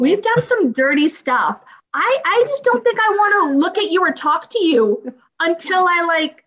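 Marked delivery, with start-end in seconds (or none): none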